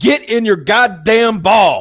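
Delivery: very high, shrill, drawn-out yell. Retelling what someone yelled while playing Pokemon: imitating someone yelling. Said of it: "somebody yelled".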